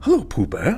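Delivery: high cartoon voice. Asked to do Tigger's voice, the speaker gives it a try: Tigger voice. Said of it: "Could you do the Tigger Tigger voice?".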